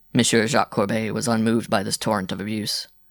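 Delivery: plain reading voice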